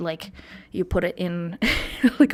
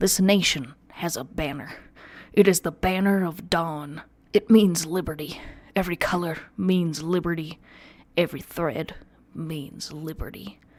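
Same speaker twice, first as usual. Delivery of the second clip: put-on commercial announcer voice. Reading quotes from the U S passport aloud: Sam Elliott voice. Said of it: "a Sam Elliott".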